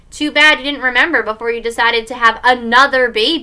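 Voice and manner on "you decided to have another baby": plain reading voice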